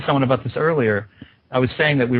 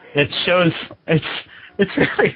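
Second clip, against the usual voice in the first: breaking into high laughter mid-sentence; 5 semitones higher than usual. Describing what a website shows to another speaker, laughing while talking. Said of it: "I'm laughing 'cause it".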